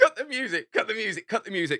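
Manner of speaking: mock shout over loud music. Speaker retells the moment on the dance floor, imitating Gendel shouting. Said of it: "and then Gendel shouts".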